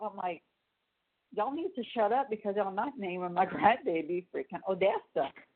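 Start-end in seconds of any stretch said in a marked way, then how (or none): none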